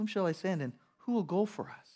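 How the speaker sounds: put-on compassionate tone on the edge of desperation. Speaker quotes a voice they heard calling for someone to send, retelling an almost desperate plea. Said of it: "Almost a desperation".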